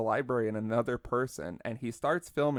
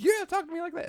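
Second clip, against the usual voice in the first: mock very high, shrieking scream; 3 dB louder than usual. Retelling two people screaming back and forth: imitating a man screaming. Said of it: "two people just screaming back and forth".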